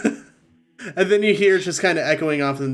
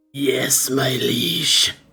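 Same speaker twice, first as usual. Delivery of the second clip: demonic voice; 2 semitones lower than usual. Narrating a scene and voicing the demon's reply, in a demon voice. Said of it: "The demon replies in Abyssal".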